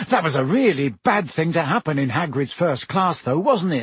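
ordinary delivery, nothing marked

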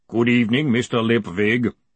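big, resounding, slow, heavy, booming golem voice. The golem greets a man arriving at his office in the evening, booming. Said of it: "the golem boomed".

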